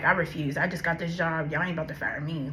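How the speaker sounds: normal talking voice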